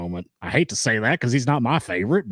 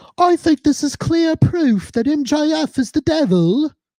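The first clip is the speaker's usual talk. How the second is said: very high, slow, loud, drawn-out announcer voice; 6 dB louder than usual. Quoting a wrestling commentator on the devil segment: Nigel McGuinness impression. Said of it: "What was that impression?".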